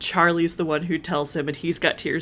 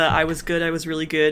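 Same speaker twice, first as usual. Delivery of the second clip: ordinary talk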